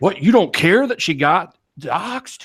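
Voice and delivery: acted angry, accusing voice, high and drawn-out. Retelling what a man said in an argument: imitating an angry man. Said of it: "This dude's, like, all mad".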